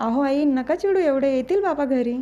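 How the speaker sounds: ordinary delivery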